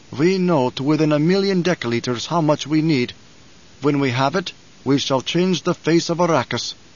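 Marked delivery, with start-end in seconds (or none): none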